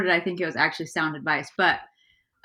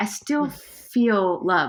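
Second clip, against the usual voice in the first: voice catching on the edge of crying, choked-up; 2 semitones higher than usual. Talking about a hard season with God, about to cry: near tears. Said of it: "sorry, I'm going to cry thinking about it".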